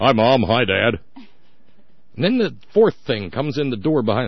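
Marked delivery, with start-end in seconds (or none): 0.0-1.0 put-on sweet child voice faking manly, loud, slow. Imitating the third kid greeting Mom and Dad, sweet little voice trying to sound manly. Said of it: "third sweet little voice that's trying to get all manly".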